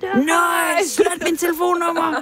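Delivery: yelled, very high-pitched shout. Recalling cold calls selling satellite dishes, retelling how most people shouted back. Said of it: "så råber de fleste jo bare".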